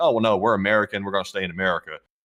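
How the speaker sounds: normal talking voice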